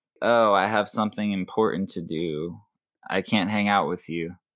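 ordinary talk

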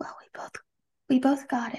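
imitated muttering under breath. Retelling a remark made quietly to someone: imitating someone muttering under breath. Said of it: "under her breath".

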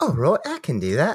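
proper English accent. Asked by the co-host for more proper English, answering in a proper English accent. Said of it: "Can you give me a little bit more proper English".

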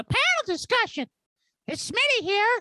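very high-pitched voice. Podcast host introducing a new episode, voice up an octave. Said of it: "my voice is up an octave".

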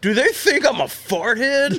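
put-on grumpy old man voice, high, slow, drawn out. Quoting the old man from part six: imitating a crotchety old man. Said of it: "he looks right at the camera and goes".

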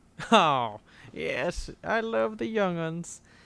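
put-on elderly old-timer, old man character voice. Replying after being called Gramps, in his old man character voice. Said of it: "That's my old man character".

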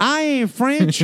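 put-on Southern US accent. Answering a jab about pronunciation, spoken in a Southern accent. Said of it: "I just said I ain't French, but in like a Southern accent".

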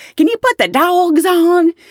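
American Southern drawl. Telling a story, a Southern flight attendant asks a Boston bartender: imitating a Southern accent. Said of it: "a Southern flight attendant".

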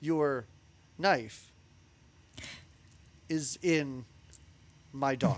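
slow, halting delivery with long pauses between words. Retelling what a character says, with giant pauses between words. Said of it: "I put giant pauses in here".

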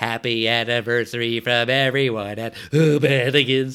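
little cartoon voice, loud, slow and drawn out. Recalling a South Park episode, quoting a line in his little Butters voice. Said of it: "In his little Butters voice".

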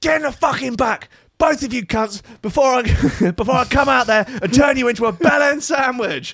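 very high-pitched scream. Retelling a voice screaming from a car window over music, imitating Gordon Ramsay screaming. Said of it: "a voice screams".

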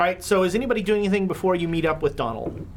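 normal talking voice

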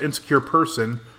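normal talking voice

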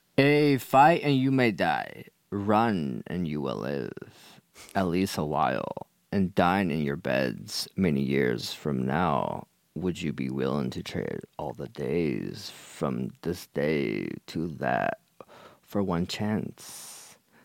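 eerily calm, low, creepy, swooping delivery. Asked by the group to inspire them, delivering a speech; creepy pep talk. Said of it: "but that was really creepy".

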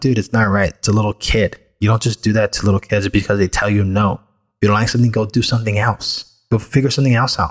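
ordinary delivery

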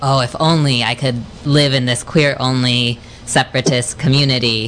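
ordinary talk, nothing marked

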